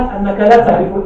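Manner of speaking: plain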